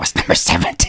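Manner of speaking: theatrical, hushed, breathy stage whisper. Retelling what he stage-whispered over to him in the classroom, stage whisper. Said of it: "stage whispering over to me".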